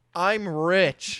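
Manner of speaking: heavily sarcastic shout. Recounting the moment the band stopped, the speaker reenacts a sarcastic yell. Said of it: "like very sarcastically".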